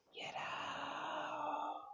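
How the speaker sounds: very high, breathy, whispered ghostly cry.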